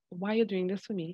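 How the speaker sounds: ordinary talk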